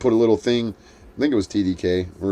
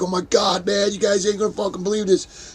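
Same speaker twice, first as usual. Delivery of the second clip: very high-pitched, frantic, excited outburst; 10 semitones higher than usual. Retelling someone arriving with a tape: imitating someone freaking out. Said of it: "he was all fucking freaking out".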